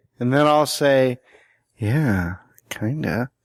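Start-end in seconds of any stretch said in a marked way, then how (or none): 1.8-2.4 low, sultry, sexy, seductive voice. Acting out a reply in an imagined porn scene: seductive, sexy voice. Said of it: "but real, like, seductive, sexy like".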